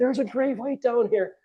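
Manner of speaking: mock panicked scream, high and frantic, bursting out. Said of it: "I pop up and I'm screaming".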